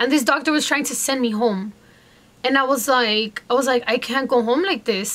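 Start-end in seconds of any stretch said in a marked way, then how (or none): none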